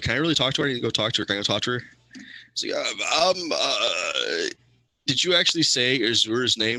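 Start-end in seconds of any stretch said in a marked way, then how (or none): none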